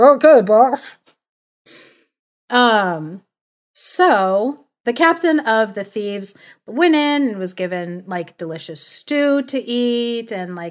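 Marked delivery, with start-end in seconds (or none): 0.0-1.0 loud male voices sounding from inside a jar. Showing how the thieves sound inside the jars: voice of men inside jars. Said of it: "what do you sound like inside?".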